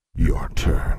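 low, deep, growling voice. Narrating a story, reading the Sphinx's line to her, growled. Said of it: "He growled".

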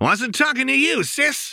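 sharp snapping tone, very high. Reading a story aloud, the narrator voices a character's retort, snapping sharply. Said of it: "Jinx snapped".

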